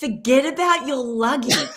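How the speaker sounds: acted yelling. Retelling how a man at the airport kept yelling: imitating someone yelling. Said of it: "he just kept yelling at me saying".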